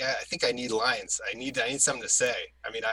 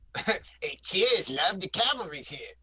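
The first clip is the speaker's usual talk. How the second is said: raised-pitch acted character voice; 6 semitones higher than usual. Asked to do the requested line as Skelly: Skelly voice. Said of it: "can you do it as Skelly?".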